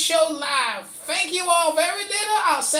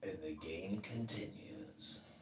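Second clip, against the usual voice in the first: very quiet, hushed, eerie, creepy put-on voice; 23 dB quieter than usual. Announcing that the game continues: put-on creepy voice. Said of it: "that was a creepy voice".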